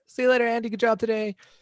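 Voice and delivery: high, nonchalant tone. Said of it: "We're like".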